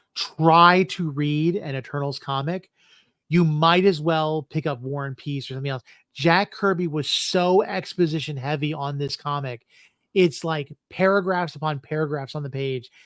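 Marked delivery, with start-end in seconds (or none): 0.2-0.9 word try stressed. Talking about trying to read eternals comics, stressing the word try. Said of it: "I'm emphasizing the word try".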